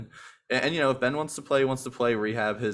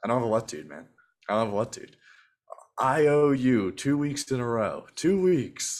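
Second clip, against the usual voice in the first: put-on baritone voice, way more baritone. Replaying his own words from last week's pod: way more baritone voice. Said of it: "a way more baritone voice".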